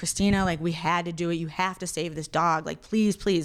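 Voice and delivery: put-on crying, pleading tone. Retelling a caller begging them to save a shot dog, imitating someone crying. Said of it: "Calls me crying like".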